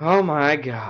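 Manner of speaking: words let out on a sigh. Reading a story, the narrator voices a character alone after another leaves: sighing. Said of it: "she sighed to herself".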